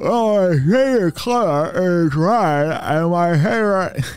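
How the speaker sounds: mouth wide open. Describing answering a dentist's question mid-checkup: talking with mouth wide open. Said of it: "your mouth is very big and very open".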